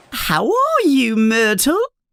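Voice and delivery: put-on, insincere, high, very false sweetness. Reading a story aloud, a girl greets a ghost: very false voice. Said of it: "asks Hermione in a very false voice".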